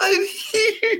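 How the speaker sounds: very high cartoon frog puppet voice. Recalling a Monday Night meme, speaker does Kermit the Frog voice. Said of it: "they used the Kermit the Frog voice".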